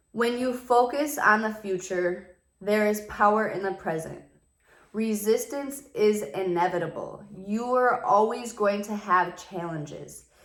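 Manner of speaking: slow, careful reading aloud.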